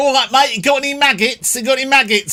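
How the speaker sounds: put-on strong Essex accent, very high and quick. Imitate a man from Berkshire talking to anglers along the bank, in a very Essex accent. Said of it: "he goes very Essex".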